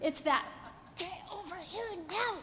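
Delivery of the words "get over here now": very quiet shouted whisper. A speaker shows how moms shout where they can't be loud: shouting in a whisper. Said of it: "know how to shout in a whisper".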